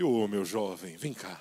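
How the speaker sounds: very low, deep, gentle preacher voice. Imitating how a career pastor talks to people, in a pastor's voice. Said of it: "o cara fala com voz de pastor".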